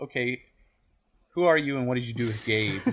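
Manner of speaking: play-acted teasing, sarcastic ribbing with mock disbelief. Retelling a comic scene where one character questions another: imitating a sarcastic question.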